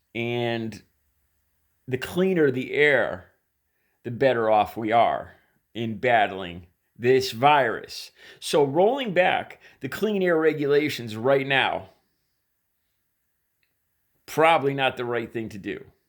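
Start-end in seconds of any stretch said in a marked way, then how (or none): 8.4-15.8 heavy dripping sarcasm, high and swooping in pitch. Commenting on rolling back clean air rules: very sarcastic. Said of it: "I'm saying that sarcastically, very sarcastically".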